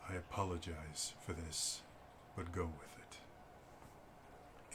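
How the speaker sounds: very quiet, low, hushed, under the breath. Voicing a character speaking briefly to Liliane: under his breath. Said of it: "under his breath".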